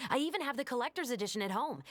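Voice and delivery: very fast, rushed, gushing delivery.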